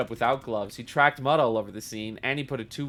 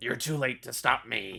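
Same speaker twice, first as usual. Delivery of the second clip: weak, cheesy, badly done villain voice. Making up voices for characters, trying a bad evil guy voice. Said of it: "That's my evil".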